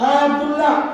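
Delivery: ordinary delivery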